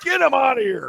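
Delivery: very high, shrill, furious, angry yell. Recounting a story, the speaker acts out a woman yelling at somebody: retelling a yell. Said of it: "It was like she's yelling at somebody".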